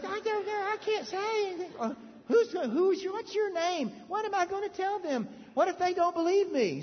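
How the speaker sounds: put-on cartoon mouse voice. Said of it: "He was talk like Mickey Mouse".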